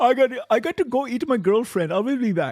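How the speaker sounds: put-on Indian-accented voice. Imitating a co-host leaving the show: imitating a co-host with indian accent. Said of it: "your impersonation makes me sound like an Indian".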